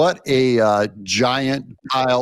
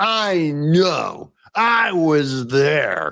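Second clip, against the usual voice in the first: put-on know-it-all host voice; 2 semitones higher than usual. Mocking the host's claim to have been there: imitating Joe Scarborough. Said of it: "I wanna start talking that way".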